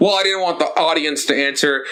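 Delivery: ordinary delivery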